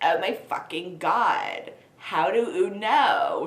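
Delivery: put-on valley girl accent. Narrator reading a story, voicing Satan's reply to a question, Valley Girl Satan voice. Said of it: "let's make him Valley Girl Satan".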